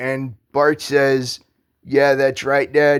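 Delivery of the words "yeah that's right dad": fast, heavy, dripping sarcasm. Recalling a line from the Simpsons game: mock-sarcastic Bart Simpson line. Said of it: "in a very sarcastic tone".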